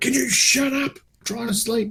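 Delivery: high-pitched, squeaky, mild mock yell.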